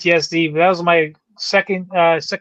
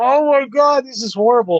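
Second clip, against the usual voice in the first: acted overwhelmed, high-pitched, tearful, close to crying; 7 semitones higher than usual. Retelling being a kid in tears watching a Super Bowl: imitating crying as a kid. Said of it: "I'm just in tears".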